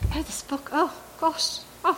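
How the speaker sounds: put-on high, sweet, cute British accent. Speaker retelling what a woman said to agents at the agency, cute British accent. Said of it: "like in her British, cute British accent".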